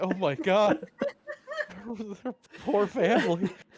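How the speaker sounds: tearful, on the verge of crying, high and swooping. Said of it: "crying about it".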